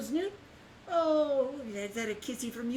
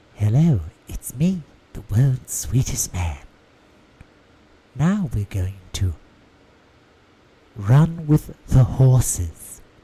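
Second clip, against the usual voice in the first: loud, put-on ASMR voice; 12 semitones lower, 10 dB louder than usual. Trying out a joking asmr intro for the stream: mock asmr voice. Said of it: "Would it be like this?".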